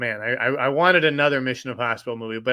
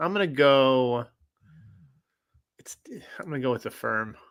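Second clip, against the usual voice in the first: reluctant, hesitant, doubtful. Announcing a movie pick to another speaker: reluctant, like a bad choice. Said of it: "Why are you making it sound like that's a tough, a bad choice?".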